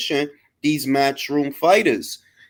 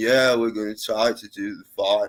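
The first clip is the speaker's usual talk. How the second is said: put-on groggy, slow, sleepy drawl; 8 semitones lower, 5 dB quieter than usual. Mocking how a promoter talks: imitating Ben's slow sleepy talk. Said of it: "you see how he talk?".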